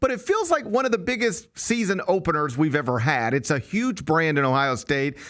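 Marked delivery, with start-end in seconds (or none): 0.0-3.3 "feels" stressed and leaned on. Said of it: "I emphasize the word feel".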